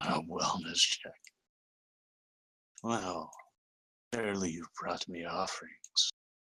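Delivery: dragon voice, chuckling and laughing through the words. Narrating a tabletop game, speaking as the dragon to the players, chuckling dragon voice. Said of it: "the dragon kind of laughs and chuckles".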